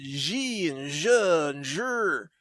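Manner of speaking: very quiet, slow put-on mainland Chinese accent. Comparing how some words sound, the speaker mimics: mainland chinese accent. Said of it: "That's a mainland Chinese accent".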